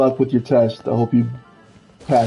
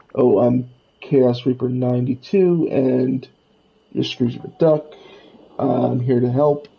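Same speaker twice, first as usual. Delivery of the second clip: plain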